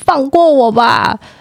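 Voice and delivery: acted half-shouted outburst, held in, mild yell. Recounting yelling at their mom on the street, retelling a shout. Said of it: "我就在路上跟他大喊".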